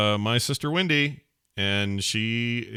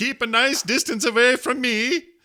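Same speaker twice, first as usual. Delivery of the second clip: put-on Swedish accent, pitched way up; 4 dB louder than usual. Imitating Swedes after describing their history, Swedish accent impression. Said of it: "That's my Swedish impression".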